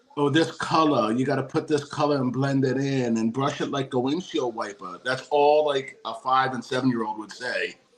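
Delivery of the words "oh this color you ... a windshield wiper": put-on Long Island accent. Recalling kids mimicking their mother's instructions, imitating a Long Island accent. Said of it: "like Long Island accent".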